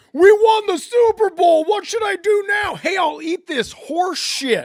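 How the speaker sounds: shrill, blaring, very high, very loud Philadelphia fan bellow. Imitating a philadelphia fan who ate police horse shit: imitating a philadelphia fan. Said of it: "the Philadelphia fan that ate the police horse shit".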